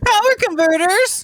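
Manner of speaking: whiny, very high-pitched voice. Playing young Luke Skywalker before he leaves Tatooine: whiny Luke Skywalker voice. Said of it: "So whiny Luke Skywalker".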